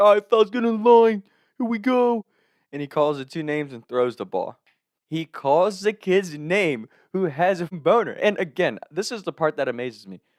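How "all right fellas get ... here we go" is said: put-on very high New Jersey accent. Retelling the coach lining the team up for a drill: New Jersey accent. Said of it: "our coach had this New Jersey accent".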